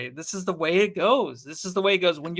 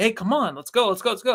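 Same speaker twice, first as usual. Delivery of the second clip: acted, high-pitched yelling, hurried; 5 semitones higher than usual. Retelling a player bringing the ball down and yelling: imitating Chris Paul yelling. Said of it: "yelling at him, like".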